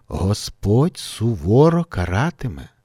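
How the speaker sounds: plain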